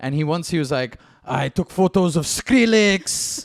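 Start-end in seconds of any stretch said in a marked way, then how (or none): 1.2-3.4 clumsy, rough put-on French accent, very slow. Quoting a drunk French photographer telling about his photo subjects: rough French accent. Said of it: "this French accent is".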